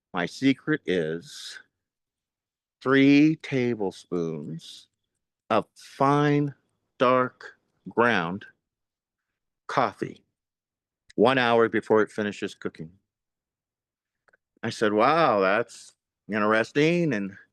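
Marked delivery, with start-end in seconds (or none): 0.1-12.9 lowered, intimate voice. Retelling how a woman shared her chili secret, in a low voice. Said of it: "in a low voice".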